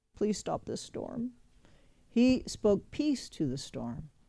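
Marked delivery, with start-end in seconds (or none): 0.2-1.3 soft, timid, meek pleading. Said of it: "He didn't pray".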